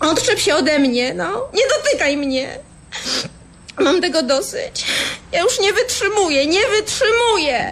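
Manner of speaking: tearful, weeping outburst, high-pitched. In a drama, a character pushes away the one comforting them after a gambling loss, crying. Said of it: "O Jezu, nie płacz".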